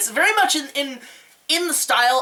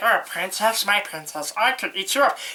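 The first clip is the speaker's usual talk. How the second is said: creepy, comic put-on demon character voice. Imitating a frog demon talking to captive women: Pee-wee Herman and Gollum mix voice. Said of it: "He sounds like a mix of Pee Wee Herman and Gollum".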